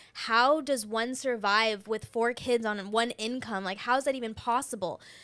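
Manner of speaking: ordinary talk, nothing marked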